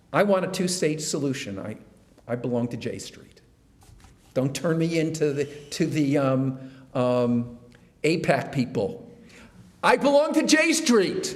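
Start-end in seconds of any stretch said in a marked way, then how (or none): 9.8-11.3 very high, yelled, shouted voice. Declaring membership toward the cameras so everyone knows: yelling. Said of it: "I'm yelling to the cameras there".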